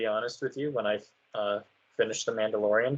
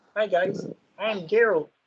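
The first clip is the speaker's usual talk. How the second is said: silly puppet-like voice, higher; 8 semitones higher than usual. Joking about a wrong voice for Geralt: Kermit the Frog voice. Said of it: "Like a whole Kermit the Frog sounding ass".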